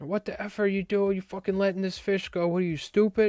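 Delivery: put-on enraged, furious yelling, pitched very high. Retelling how the guys on the rocks cursed at the speaker, imitating angry yelling. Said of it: "They were like all yelling at me".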